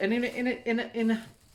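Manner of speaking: stuttering. About to show something surreal to the audience, stuttering. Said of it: "excuse me while I stutter".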